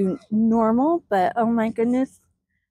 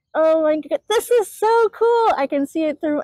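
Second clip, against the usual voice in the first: excited yelling, much higher; 6 semitones higher than usual. Watching something through her phone while filming, excited yelling. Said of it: "I don't mean to yell".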